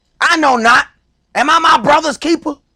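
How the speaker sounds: put-on bold, aggressive defiance. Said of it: "you said that with your chest".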